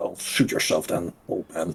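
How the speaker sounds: annoyed, breathy, half-whispered mutter. A narrator voices an annoyed squire-like person walking out of a room. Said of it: "an annoyed, well, almost squire-like person".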